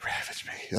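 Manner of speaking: hushed, breathy whisper, very quiet. Retelling how another speaker whispered a line: imitating a whisper. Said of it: "please never whisper that".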